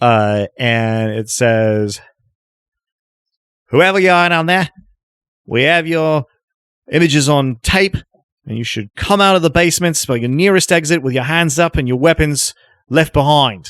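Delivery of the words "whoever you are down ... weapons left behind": amateur put-on Australian accent, amplified as through megaphone. Relaying a message shouted down through an opening, in an attempted australian accent. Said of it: "somebody with a better Australian accent than I'm going to be able to do".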